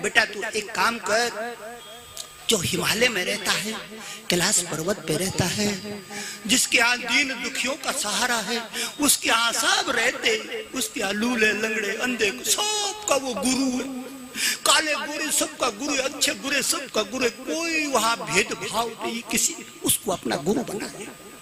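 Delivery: tearful, speaking through tears.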